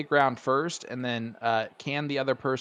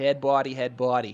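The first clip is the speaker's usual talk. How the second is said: attempted put-on Boston accent. Asking how the Boston accent goes, the speaker tries a put-on Boston accent. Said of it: "how does that Boston accent go?".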